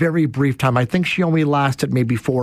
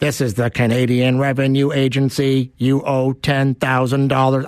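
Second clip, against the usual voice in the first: put-on robotic, robocall-style voice. Imitating a scam call voicemail: imitating a robotic voice. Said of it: "if it's that robotic voice".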